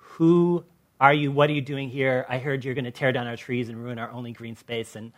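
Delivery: ordinary talk, nothing marked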